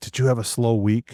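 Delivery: imitated whisper in a child's voice. Retelling what a five-year-old asked at the collection plate: imitating a child whispering. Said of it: "whispers in my ear".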